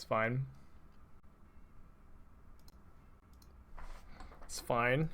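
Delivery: slow whisper through clenched, gritted teeth. Playing a card game as the opponents reveal their blessing card, speaking through gritted teeth. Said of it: "he says through gritted teeth".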